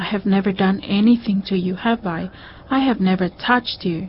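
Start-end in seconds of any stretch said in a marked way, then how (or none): none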